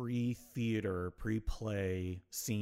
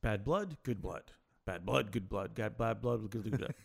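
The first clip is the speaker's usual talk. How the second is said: rapid-fire, rattled-off fast repetition. Speaker demonstrates a tongue twister to the other speaker, saying it fast. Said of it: "Just say that five times fast".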